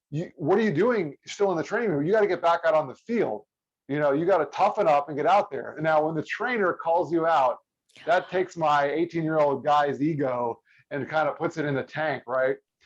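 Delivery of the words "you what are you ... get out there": put-on yelling in a scolding tone. Retelling the head trainer calling across the training room: imitating someone yelling. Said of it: "he's yelling at me from across the training room".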